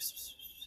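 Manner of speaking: soft, voiceless hissing psst noises. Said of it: "whispering to Rodrigo".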